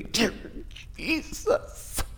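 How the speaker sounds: whispered, breathy, fake-pained praying voice. Mocking people who sound in pain while praying: mock-pained praying voice. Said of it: "People sounding in pain in their prayers when they're not".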